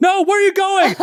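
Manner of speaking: very high yell, calling out. Retelling yelling at a rodent as it runs into the street; retelling own yell. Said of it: "just like yelling at him in English".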